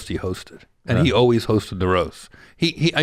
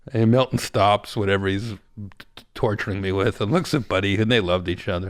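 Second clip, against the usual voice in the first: normal talking voice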